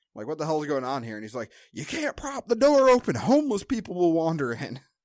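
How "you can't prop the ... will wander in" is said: shrill, very high, loud, tantrum-like ranting yell. Retelling how a guy yelled at the speaker's dad; imitating a guy yelling. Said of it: "he's yelling at my dad".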